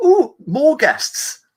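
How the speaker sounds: excitedly. A narrator voices a lady character to the players, excited. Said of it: "She says excitedly".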